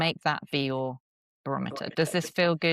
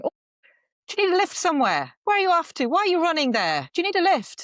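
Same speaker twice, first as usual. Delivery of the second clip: put-on very high, animated, sing-song rural Irish accent; 6 dB louder than usual. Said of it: "Excuse my Irish accent".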